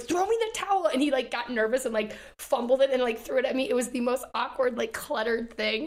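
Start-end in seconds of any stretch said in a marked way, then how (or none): 0.0-0.9 mock yell, pitched right up, very high. Retelling what you yelled at a guy after getting out of the water, retelling a yell. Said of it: "like yelled at this one guy".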